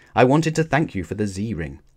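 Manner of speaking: usual speaking voice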